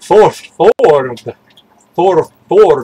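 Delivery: dwarf voice with extra r sound in "forward". Showing how a name is supposed to be pronounced: like a dwarf saying it. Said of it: "It's supposed to sound like a dwarf saying it".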